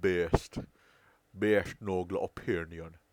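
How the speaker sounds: loud, slow, horrible put-on Irish accent. Joking while watching a clip together: horrible Irish accent. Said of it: "that was a horrible Irish accent".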